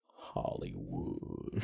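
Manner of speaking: whispered, hushed, stretched-out whine. Doing a Nails line as Sam Elliott, whining the name: whiny Nails voice as Sam Elliott. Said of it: "And he's whining".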